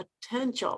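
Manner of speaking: emphasis on "potential". Retelling what a woman said when she called her, stress on 'potential'. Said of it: "she stressed the word potential".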